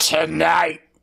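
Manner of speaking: put-on heavy stress on 'tonight'. Recounting how a man said one word in his speech, mimicking extra stress on 'tonight'. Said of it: "he put a bit of extra in that tonight".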